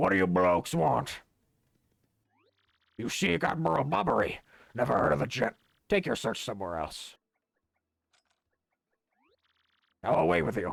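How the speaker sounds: put-on pirate voice. Playing a game, the speaker voices a character's dialogue: pirate voice. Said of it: "I'm just gonna give him a pirate voice".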